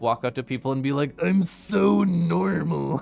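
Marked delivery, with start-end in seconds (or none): 1.2-3.0 put-on classic rough-edged, creaky drunk voice. Recalling walking up to people while drunk, mock drunk voice. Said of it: "in a classically drunk voice".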